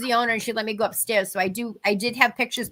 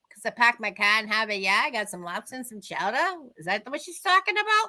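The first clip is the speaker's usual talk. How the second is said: thick, exaggerated put-on Boston accent, sing-song swoops. Retelling an answer to someone asking about the boston accent: exaggerated boston accent. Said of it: "What is the Boston accent".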